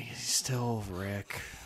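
very soft, slow upset delivery. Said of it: "upset saying that".

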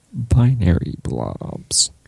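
slight creaky voice throughout, light vocal fry. Leaning closer to the mic to repeat the phrase: a little vocal fry. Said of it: "Got a little bit of vocal fry there".

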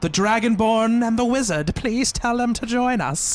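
put-on eerie, high, scary old crone voice. Voicing the woman behind the slammed door, asking the player to bring the others, crone voice. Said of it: "Crone voice".

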